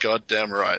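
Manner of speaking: ordinary talk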